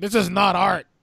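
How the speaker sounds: loud, play-acted old woman hollering. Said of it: "yelling at Jake Gyllenhaal saying".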